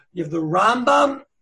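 loud Rambam with stress on the first syllable RAM.

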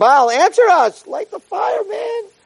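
mock shrill, high-pitched, drawn-out rising scream. Retelling how worshippers cried out to their god: imitating people screaming. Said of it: "And they were screaming".

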